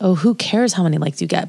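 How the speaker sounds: ordinary delivery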